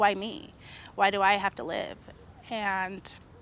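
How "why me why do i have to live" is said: usual speaking voice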